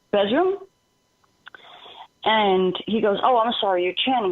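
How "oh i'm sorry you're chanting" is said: ordinary delivery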